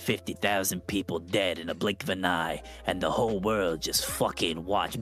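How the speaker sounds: gruff bad-guy voice. Retelling a bad guy's line from a movie scene, in a badass gruff voice. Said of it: "like badass gruff voice of like".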